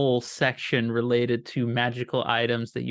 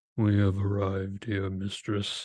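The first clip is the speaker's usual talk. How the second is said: deep, dreadful, terrible knight voice; 4 semitones lower than usual. Narrating a scene, the speaker voices a knight with a flaming sword addressing his mistress in a terrible voice. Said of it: "speaking in a, a terrible voice".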